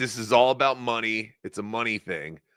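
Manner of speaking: plain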